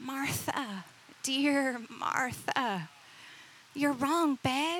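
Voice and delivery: gentle, kind put-on voice. Retelling how Jesus answered Martha in a kind voice: kind tender voice as Jesus. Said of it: "he spoke to her in a kind voice".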